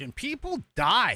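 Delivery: ordinary talk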